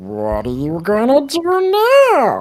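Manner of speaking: high, swooping, doubled and layered creature voice. A crystal-ball being speaks up, in an overlaid creature voice. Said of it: "its voice is kind of like overlaid".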